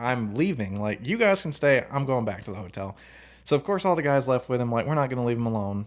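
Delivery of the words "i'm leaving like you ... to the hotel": openly distressed, upset delivery. Retelling how he insisted on leaving, imitating someone visibly upset. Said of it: "he was visibly upset".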